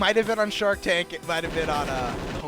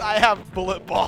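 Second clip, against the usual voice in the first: put-on voice, practically crying, near tears. Retelling a pitch show where a guy answers the investors, imitating someone practically crying. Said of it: "practically crying and goes".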